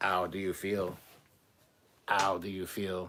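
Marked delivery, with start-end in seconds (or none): 0.0-1.0 robotic, machine-like synthetic computer voice. Recalling a scene, the speaker quotes the computer in their best computer voice. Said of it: "In my best computer voice".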